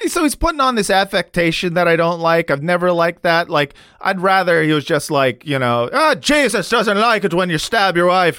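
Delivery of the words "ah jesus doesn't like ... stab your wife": affected Irish voice, assumed brogue. Showing how he would rather the character talk: put-on Irish accent. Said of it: "just be Irish".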